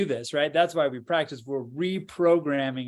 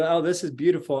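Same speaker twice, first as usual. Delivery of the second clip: ordinary delivery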